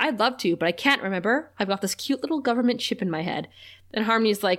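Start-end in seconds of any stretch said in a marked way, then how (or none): none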